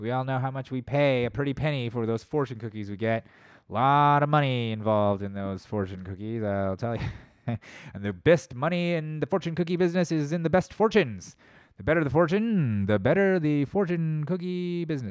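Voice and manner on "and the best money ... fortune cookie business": odd, put-on mid-Atlantic accent. A speaker riffing in a bit, in a weird mid-Atlantic accent. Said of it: "It was kind of a weird mid-Atlantic".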